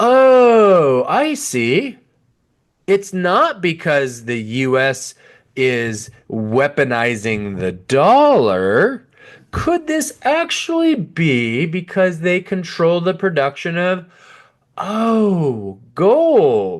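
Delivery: thick, high, swooping sarcasm, long drawn-out "oh". Questioning why countries move away from the dollar: dripping sarcasm. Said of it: "Excuse the dripping sarcasm".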